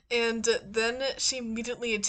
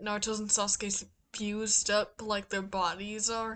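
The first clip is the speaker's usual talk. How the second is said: usual speaking voice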